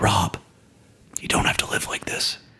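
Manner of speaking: soft, breathy, very whispery delivery. Recalling a Rob Bell video where he talks to a guy: whispery Rob Bell delivery. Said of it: "It's real whispery".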